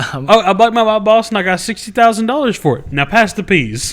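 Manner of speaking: put-on offhand tone, high pitch. Retelling a father's dinner-table answer from a funny scene, mock-nonchalant delivery. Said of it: "he said it so nonchalant".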